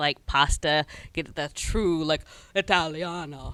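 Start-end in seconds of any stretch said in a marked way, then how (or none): 1.1-3.5 bad, butchered, put-on Italian accent.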